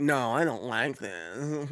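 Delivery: very slow, deliberate, drawn-out voice. Retelling his wife's complaint about an anime: imitating his wife. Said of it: "that's my impression of my wife".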